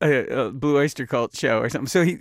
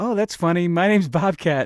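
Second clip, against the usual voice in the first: snarky, mocking, sarcastic teen-sounding delivery; 4 semitones higher than usual. Retelling what he said as a teen about the nickname, retelling a sarcastic teen remark. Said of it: "being sarcastic little angst-ridden teens".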